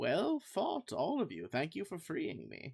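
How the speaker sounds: eerie voice echoing as if doubled. A storyteller voicing a woman turning to the group, in a weird doubled voice. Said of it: "kind of a weird doubling like in your head".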